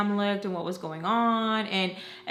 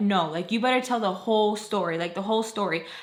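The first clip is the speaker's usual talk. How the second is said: plain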